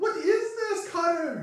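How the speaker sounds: frightened, squeaky, very high, loud voice. Voicing a startled woman hiding behind someone: squeaking voice. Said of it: "just sort of squeaks out".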